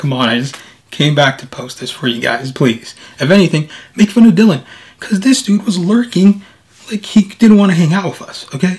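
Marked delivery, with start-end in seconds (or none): 3.2-8.5 high, loud, pushy sassy teasing. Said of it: "I'm, like, sassy or whatever right now".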